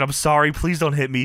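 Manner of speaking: mock crying and begging. Retelling what a man said before someone walked up, mock crying and begging. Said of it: "begging off crazy, crying".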